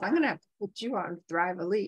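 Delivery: imitated mumbling under the breath. Retelling a remark made while thinking: imitating mumbling under the breath. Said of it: "I'm kinda mumbled under my breath".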